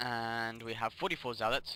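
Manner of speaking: usual speaking voice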